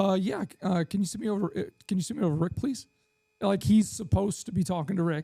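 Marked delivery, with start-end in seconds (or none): 0.2-2.9 play-acted offhand, easygoing, nonchalant and casual tone. Retelling a sales call, asking the receptionist for Rick: imitating a nonchalant caller. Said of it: "Bob's just nonchalantly".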